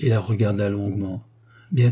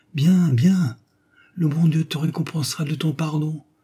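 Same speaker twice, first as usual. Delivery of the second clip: soft, high-pitched murmur; 5 semitones higher than usual. Reading a novel, the narrator voices a dying woman's reply, murmuring as if dying. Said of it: "murmura la mourante".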